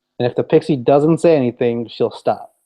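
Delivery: ordinary delivery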